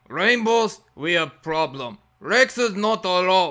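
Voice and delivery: loud, fake, put-on Russian accent. Trying out an audition line for a game's new voice: fake russian accent. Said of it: "maybe you have a good fake Russian accent".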